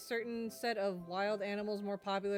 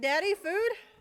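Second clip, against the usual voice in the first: very high, loud, squeaky pleading cat voice; 9 semitones higher, 9 dB louder than usual. Voicing the cat waiting for food: voicing the cat begging. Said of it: "She's like".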